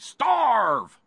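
high, loud mock preacher yell. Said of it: "an M P three of John Hagee yelling".

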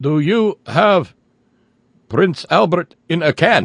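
bad put-on Russian accent. Imagining a voice calling on the phone: bad Russian accent. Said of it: "doing a bad Russian accent saying".

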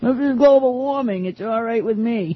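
put-on Maine accent. Mocking people who say global warming on a warm January day, in a Maine accent. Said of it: "that was my Maine accent".

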